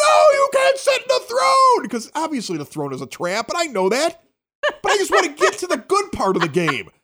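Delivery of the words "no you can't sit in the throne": shrill, very high, stretched-out drawn-out scream. Retelling how the other players reacted to sitting in the throne: imitating people screaming. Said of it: "all the nerds started screaming like".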